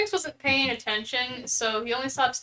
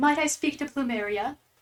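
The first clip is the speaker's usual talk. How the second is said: eerie, spooky, floaty female ghost voice; 4 semitones higher than usual. Voicing a spooky floaty ghost lady at the hallway's end: voicing a spooky ghost lady. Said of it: "a spooky floaty ghost lady appears".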